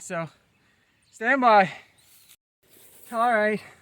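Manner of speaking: breathless, puffing, winded, out-of-breath talk. Working outdoors in the heat, already out of breath. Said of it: "I'm already out of breath".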